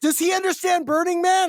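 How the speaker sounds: very high yell, calling out. Retelling how his wife yelled to the waiting line: imitating someone yelling. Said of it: "she just yelled to the line and said".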